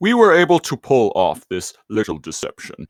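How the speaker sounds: gargly put-on character voice, gargled through the throat. Retelling a cartoon scene, doing a Megatron voice. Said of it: "that one was much better".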